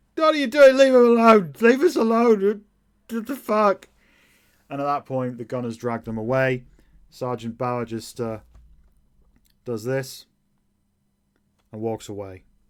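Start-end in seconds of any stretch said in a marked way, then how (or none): 0.2-3.9 very high, shrill, very loud full-throated yelling. Narrating the scene, God Guzzler yells at the gunners: yelling out. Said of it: "God Guzzler yells out".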